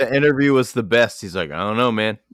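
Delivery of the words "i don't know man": put-on casual indifference. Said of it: "And he was so nonchalant".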